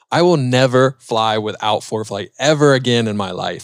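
plain

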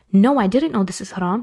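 ordinary talk, nothing marked

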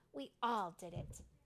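ordinary delivery

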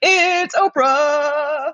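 very high, drawn-out announcer-style swelling crescendo. Wondering how she introduced herself on the phone: Oprah crescendo voice. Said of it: "her kind of interesting crescendo sounding voice".

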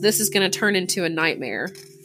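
ordinary talk

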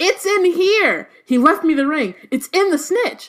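sky-high, very high-pitched, excited yelling. Reading aloud a character realizing the ring is inside the snitch: excited shouting. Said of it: "he was shouting out in all caps".

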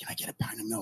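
very quiet hushed whisper, barely voiced. Telling a library joke, the man's punchline line: whispering. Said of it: "And he whispered".

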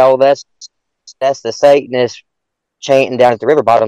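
plain

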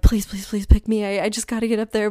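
mock-nervous voice. Retelling their thoughts while standing near the stage hoping to be picked, retelling a nervous plea. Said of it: "I'm like just shaking".

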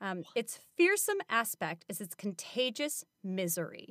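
plain

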